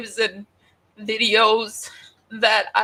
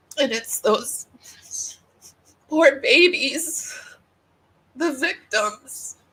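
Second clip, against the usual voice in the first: tearful, choked-up voice, crying while talking; 3 semitones higher than usual. Telling viewers she is crying about them and the victims, tearful voice. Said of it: "I've been crying for three days".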